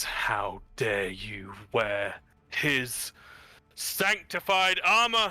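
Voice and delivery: slow, rising, outraged snarl of fury. Voicing a warrior who points her halberd at a figure: snarling angry line. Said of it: "there's just this snarl on Kadra's face".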